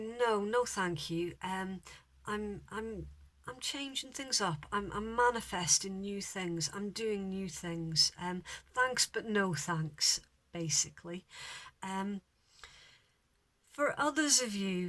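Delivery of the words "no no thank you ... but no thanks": plain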